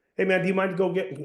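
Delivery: relaxed, offhand, casual voice, a bit high. Showing how to casually ask a favor, in a casual tone. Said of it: "it's going to be a casual tone like".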